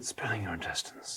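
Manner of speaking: soft, hushed whisper, barely voiced. Recounting a line they loved, the speaker quotes it, retelling a whispered line. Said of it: "kind of whisper it".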